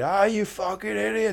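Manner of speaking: play-acted, high-pitched screaming outburst. Retelling how the fans react to the team: imitating fans screaming. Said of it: "one minute they're screaming".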